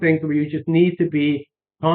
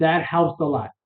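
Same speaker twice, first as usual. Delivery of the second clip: ordinary delivery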